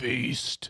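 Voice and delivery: very deep smoker's rasp, belted out loudly. Showing a voice that drops octaves to belt a word, very deep, raspy belted voice. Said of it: "your voice drops three octaves and you just fucking belt it out. ... like you smoke six packs of cigarettes".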